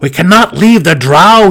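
forced out through gritted teeth. A narrator reads Belwar's reply, spoken through clenched teeth. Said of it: "he replied through clenched teeth".

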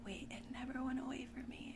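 soft, unvoiced whisper.

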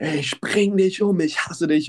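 ordinary talk

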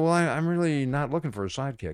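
ordinary delivery

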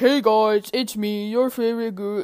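weird, unsettling, creepy voice. Podcaster trying out an intro, in a weird kidnapper voice. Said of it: "I just sound like a really weird kidnapper".

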